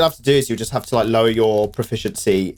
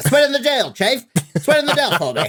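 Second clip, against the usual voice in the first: fake American accent, much higher pitch; 14 semitones higher than usual. Speaker retelling asking a seller to sweeten the deal: put-on american accent. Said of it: "I put an American accent on too".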